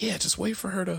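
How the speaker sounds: mock offhand, nonchalant, no-big-deal tone. Speaker retells a girl's answer to their question: imitating a nonchalant reply.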